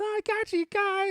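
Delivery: put-on high, loud, taunting eight-year-old kid voice.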